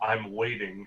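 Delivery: sickly, bizarre, otherworldly voice. Game master voices the voice Durembori hears in their head: sickly, bizarre telepathic voice. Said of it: "a sickly, extraplanar, bizarre, telepathic voice".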